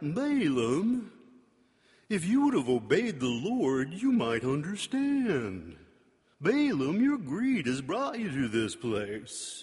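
funny, judgy, condescending cartoon donkey voice. Retelling how the donkey talks to Balaam in animated versions, in a funny cartoon donkey voice. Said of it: "he's got the funny voice he's like".

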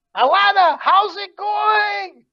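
very high, loud shout. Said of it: "He's shouting out like".

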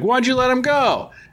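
high, squeaky mock voice. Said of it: "he's like".

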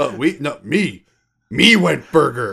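caveman voice, spoken very slowly. Retelling a film scene, imitating Dwayne: caveman speak imitating Dwayne. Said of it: "goes to, like, caveman speak".

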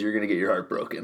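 grave, dead-earnest, dead-serious tone. Retelling a father's warning about heartbreak: imitating dad, dead serious. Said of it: "dead serious".

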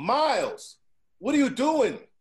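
loud, high-pitched shout.

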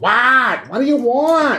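bad put-on Jersey accent. Describing a female character's voice, imitating it in a horrible Jersey-ish accent. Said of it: "horrible Jersey-ish".

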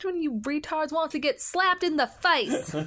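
put-on acted kid's voice. Quoting a line the way kids say it: imitating the kids' voice. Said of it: "Said in the voice of, you know, the kids who say it".

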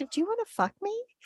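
very high, flirtatious voice. Retelling a scene where Shiv comes on to Greg: imitating Shiv coming on to Greg. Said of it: "she was coming on to him".

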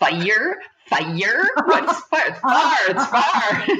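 put-on high, slow teasing mockery. Retelling how an uncle made fun of a word: imitating uncle mocking. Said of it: "he would make fun of me".

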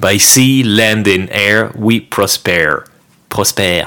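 slow, put-on American accent in English. Reading out the quiz answer in English: put-on American accent. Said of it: "Pourquoi il a un accent américain maintenant ?".

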